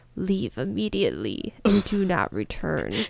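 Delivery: deep, swooping, bad spooky ghost voice. Retelling a voice warning visitors in an abandoned mental hospital, deep warning voice. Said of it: "followed by a deep voice that warned".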